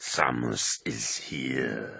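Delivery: unhurried slow drawl, here stretched out. Narrating a dark story, the speaker reads the misshapen brute's line, drawling. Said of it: "he drawled".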